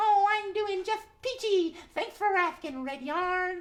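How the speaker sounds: put-on very high kids' show groundhog critter voice. Answering Red Yarn as a groundhog character: Gracie the Groundhog voice. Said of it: "Thanks for popping up today, Gracie".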